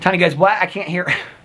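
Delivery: normal talking voice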